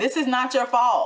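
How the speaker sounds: acted-out loud yelling. Recounting a sad TV show, the speaker acts out retelling screaming at the TV. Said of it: "I'm like screaming at the T V".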